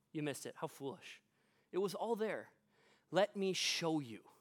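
mock gentle but firm tone. Retelling what he said to the two who missed it, acting out gentle but firm words. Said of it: "he gently but firmly goes".

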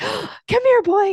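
very high, drawn-out, coaxing pet talk. Explaining how people change their voice to get a dog's attention, dog-calling voice. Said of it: "they'll usually change their voice".

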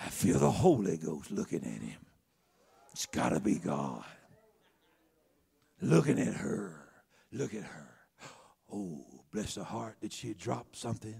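voice dropped very low.

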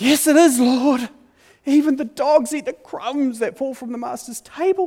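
very high imploring voice. Retelling the Gospel story, voicing the woman answering Jesus: acting out an imploring plea. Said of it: "in an imploring kind of a way".

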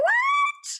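very high, loud, shocked yelp.

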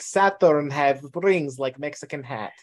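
put-on Romanian accent. Recalling what Dr. Muscutario said in class about the star charts, Dr. Muscutario's Romanian accent. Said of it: "he's talking a Romanian accent".

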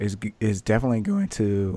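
voice cracking. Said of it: "my voice just cracked".

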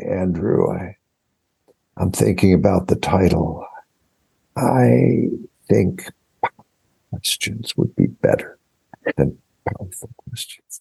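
mock slow elderly voice. Retell a phone call from a man much older than you, imitating Jerry talking very slowly. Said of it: "he talked very slowly".

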